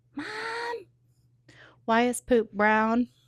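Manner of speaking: put-on sweet, small little child's voice. Retelling how the six-year-old woke the parent, in a little baby voice. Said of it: "I hear this beautiful little baby voice".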